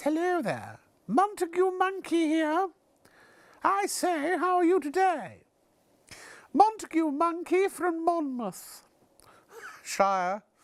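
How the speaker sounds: put-on very high-pitched children's TV presenter style. Voicing how a monkey named Montague talks, in a Montague Monkey voice. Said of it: "I think he talks like this".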